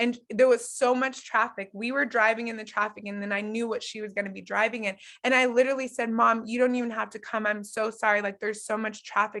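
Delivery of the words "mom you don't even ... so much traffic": tearful, crying voice. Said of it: "I'm crying on the phone".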